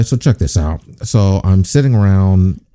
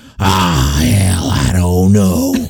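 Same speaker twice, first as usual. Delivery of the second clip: put-on smoky smoker's voice. Retelling what Carrie answered about last week's episode: imitating Carrie's menthol smoker voice. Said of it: "you sound like you've been smoking menthols?".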